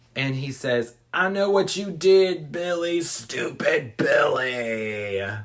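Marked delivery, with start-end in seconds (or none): 1.2-5.3 slow country drawl, one word stretched long. Retelling a call from the Moaner to the sorority house, the Moaner's country accent. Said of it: "now he's doing a country accent".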